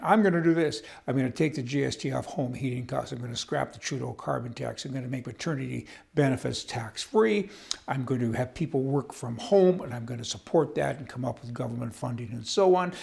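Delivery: ordinary talk, nothing marked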